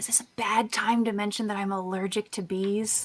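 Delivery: hushed stage whisper. Character leans over to speak to the group during a tense encounter, stage whisper. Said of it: "like stage whisper".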